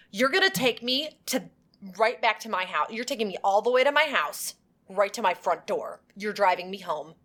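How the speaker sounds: put-on lecturing, guilt-tripping, reproachful tone. Retelling a threatened driver being lectured and guilt-tripped: imitating someone lecturing. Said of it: "She lectures him and guilt trips him".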